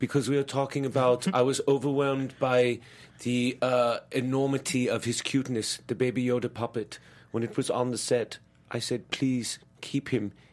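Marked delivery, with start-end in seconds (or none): 1.3-10.3 put-on German accent, quieter. Explaining the weird accent to Adam's questioner after trying to do Gal, Werner Herzog impression. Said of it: "ended up doing more Werner Herzog".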